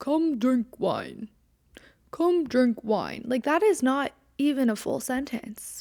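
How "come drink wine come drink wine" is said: sing-song, primitive caveman voice. Quoting a man's short text message aloud, imitating a caveman. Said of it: "he's texting me like he's a caveman".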